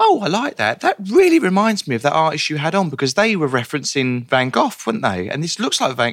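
high-pitched, swooping voice, carefully reproduced. Recalling exhibition visits with their mum, the speaker imitates their mum's voice. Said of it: "Is that her voice?".

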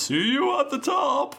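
very high, cheerful call. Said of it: "Zerd ... goes".

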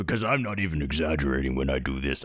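super-deep, very low voice. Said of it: "how fucking deep is [name]'s voice in his own head".

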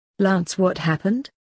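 ordinary delivery

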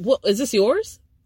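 ordinary delivery

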